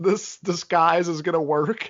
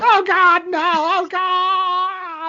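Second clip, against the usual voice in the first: mock frantic shrieking wail, very high pitch; 11 semitones higher than usual. Describing a woman flailing on the ground, imitating panicked screaming. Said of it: "she's just flailing on the ground".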